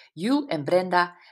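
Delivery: ordinary delivery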